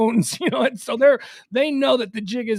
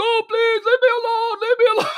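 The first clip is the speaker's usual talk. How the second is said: very high, sobbing, crying voice; 12 semitones higher, 4 dB louder than usual. Describing a video of a man dragged into a drainage pipe, imitating Gaddafi crying and begging. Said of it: "Like he's crying, he's begging".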